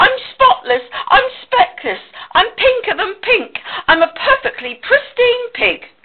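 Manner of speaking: shrill, very high, proud, showing-off yell. Reading a story, a pig shouts as he prances before his friends, shouting. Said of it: "he shouted as he pranced".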